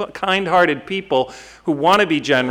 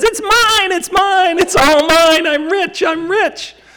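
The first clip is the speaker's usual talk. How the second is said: tiny, shrill, squeaky voice, very high; 14 semitones higher, 5 dB louder than usual. Describing a cartoon scene, voicing the tiny rabbit: squeaky tiny Bugs Bunny voice. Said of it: "in a squeaky high miniature voice".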